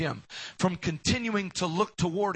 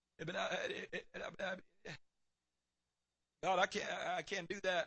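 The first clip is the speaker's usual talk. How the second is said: put-on stutter, quieter; 13 dB quieter than usual. Retelling Moses answering God's call: imitating Moses stuttering. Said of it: "I'm slow of speech and I stutter".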